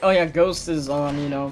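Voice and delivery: normal talking voice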